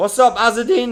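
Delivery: voice cracking. Streamer greeting a viewer in chat, voice cracking. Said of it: "Oh, my voice cracked".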